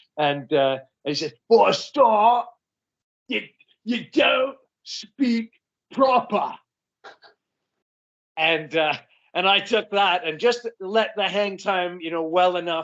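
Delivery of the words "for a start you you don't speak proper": put-on Essex accent, pitched up. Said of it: "this is my best, best Essex impression".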